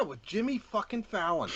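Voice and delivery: bitter, angst-filled, high, angry outburst. Naming a comedian who ruined so many skits, angry with angst. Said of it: "I said that with a lot of, like, angst and anger".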